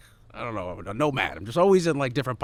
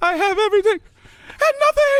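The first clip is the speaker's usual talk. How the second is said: mock sobbing while laughing, higher and louder; 11 dB louder than usual. Retelling a breakdown when the TV wouldn't work, imitating hysterical crying and laughing. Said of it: "on the floor hysterically crying and laughing".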